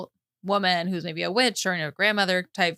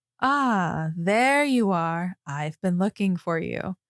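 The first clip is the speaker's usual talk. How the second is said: deep, dropped voice. Retelling a story where a new figure calls out to a woman, deep voice. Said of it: "there's a deep voice that goes".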